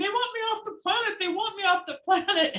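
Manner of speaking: play-acted, high-pitched screaming, over and over. Telling how paramedics got her out of her car, retelling a scream. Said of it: "I started screaming".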